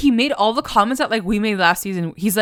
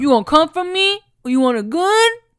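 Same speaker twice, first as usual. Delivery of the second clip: tough gangster voice, pitched up; 7 semitones higher than usual. Recapping a show scene, voicing Dodger threatening another man in mock-gangster talk. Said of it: "gangster all of a sudden".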